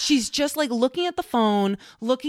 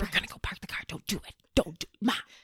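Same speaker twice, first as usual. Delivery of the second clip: imitated whisper, quieter than normal; 3 semitones lower, 8 dB quieter than usual. Retelling a warning to Mom in a shared house: imitating a whisper. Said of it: "And we're whispering".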